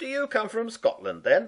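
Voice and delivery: amused, very high, loud and swooping. The baker questions the cat Campbell; said with a grin. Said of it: "grinned the baker".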